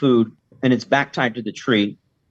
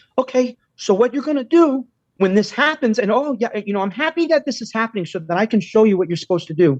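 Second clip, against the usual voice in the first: put-on terrified voice, much higher; 9 semitones higher than usual. Quoting a woman explaining on camera what to do about a dog, imitating a terrified voice. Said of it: "she's fucking terrified".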